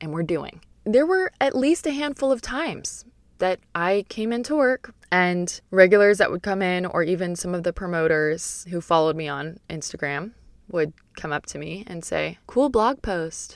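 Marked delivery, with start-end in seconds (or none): 12.5-13.6 mock condescending, patronizing, talking-down tone. Speaker retelling what regulars said about a blog post, mimicking a condescending tone. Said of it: "kind of in a condescending tone".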